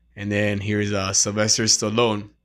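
usual speaking voice

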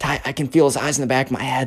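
quiet whisper. Retelling a scared friend's words at camp: imitating a whisper. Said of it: "Benjamin kinda whispers".

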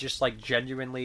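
ordinary talk, nothing marked

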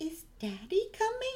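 high voice, every sound carefully over-enunciated. Recalling adorable movie moments, imitating the child: over-enunciating like Mara Wilson. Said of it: "really over-enunciating her words".

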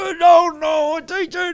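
enraged, shrill, very high-pitched angry screaming. Retelling how the coach turned on the speaker, imitating a coach screaming. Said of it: "he starts screaming at me".

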